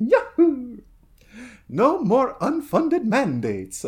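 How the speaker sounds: yahoo pitched very high and swooping, cartoon hero style. Speaker imagines a line said in the Mario voice, doing the Mario voice. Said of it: "doing the Mario voice".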